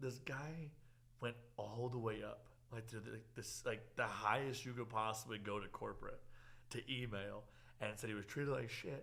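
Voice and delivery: ordinary talk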